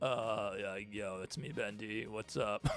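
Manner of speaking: super lazy drawl, very soft, barely above a murmur. Showing the voice used for a character: super lazy Bendy voice. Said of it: "the Bendy voice is really f-, it's really funny. It's, like, super lazy".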